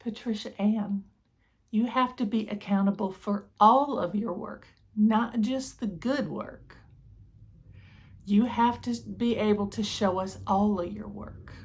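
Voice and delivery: patient, gentle motherly tone. Retelling what her mom said to her about accountability, in mom's very soft voice. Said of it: "my mom said to me in a very soft voice".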